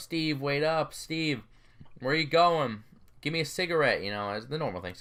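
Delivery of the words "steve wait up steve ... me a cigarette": mock drunk man yelling, higher. Retelling how a drunk man yelled to his buddy walking ahead: imitating a drunk man yelling. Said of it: "this man's yelling, you know".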